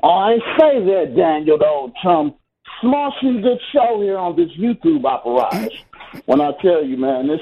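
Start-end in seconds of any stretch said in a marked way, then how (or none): 0.0-5.7 English accent, put on for show. A caller to a sports radio show opens his call in an English accent. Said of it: "was that an English accent?".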